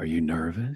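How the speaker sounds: very low, hushed, deep put-on voice. Retelling asking someone watching highlights if he's nervous, deep voice. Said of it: "I just said it in that deep voice where I go".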